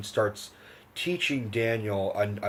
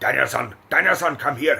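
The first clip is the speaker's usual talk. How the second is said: put-on Okinawan accent; 4 semitones higher, 6 dB louder than usual. Describing a film character calling Daniel over, thick Okinawan accent. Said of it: "this real thick Okinawa accent".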